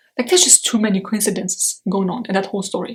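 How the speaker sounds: ordinary delivery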